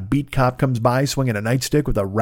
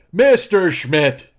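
voice projecting across room; 6 semitones higher, 4 dB louder than usual. Testing how they sound from far from the microphone: projecting from a distance. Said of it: "that's me projecting from this distance".

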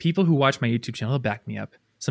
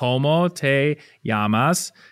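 perfect native Spanish accent, normal speaking speed. Showing how to ask someone's name in spanish: perfect spanish accent. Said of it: "perfect accent".

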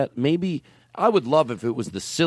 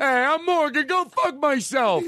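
high, slow put-on teenage voice. Mocking a sixteen-year-old who tells everyone off: imitating Morgan. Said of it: "I hate to break character so much".

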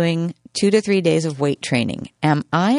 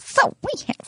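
prim, high-pitched lady voice. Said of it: "Are you church lady right now?".

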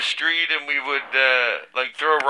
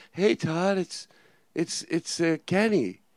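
gentle, quieter put-on child voice; 3 semitones higher, 6 dB quieter than usual. Replaying another speaker's impression of Kenny as a ten-year-old: gentle voice imitating Kenny. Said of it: "You were gentle".

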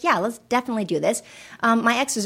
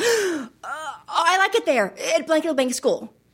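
put-on acted-out, frightened, halting, slow, panicked child's voice; 6 semitones higher than usual. Retelling a child's words seen in the rearview mirror: imitating a panicked child. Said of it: "this panic look on his face".

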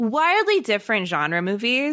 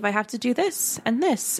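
put-on matter-of-fact voice; 2 semitones higher than usual. Retelling a movie hermit's lines: imitating Zach, matter-of-fact. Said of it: "so matter-of-fact".

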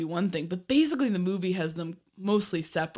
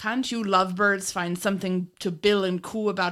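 put-on bad Irish accent. Reading out the boss's quote from the show: imitating a fake Irish accent. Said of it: "this guy's fake-ass Irish accent".

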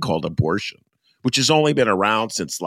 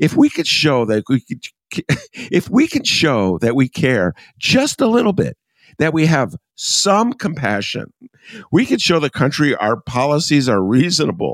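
reading while fighting back laughter; 6 semitones higher, 4 dB louder than usual. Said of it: "I'm trying to read this with a, a straight face".

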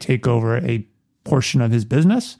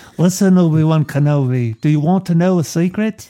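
put-on British accent, higher pitched; 4 semitones higher than usual. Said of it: "it's more like the accent".

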